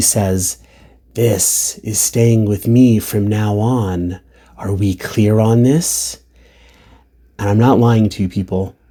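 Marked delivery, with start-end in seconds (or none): 1.1-6.2 put-on snarling voice. Speaker retelling a woman taking the bottle from Dad, imitating a snarl. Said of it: "And she snarls".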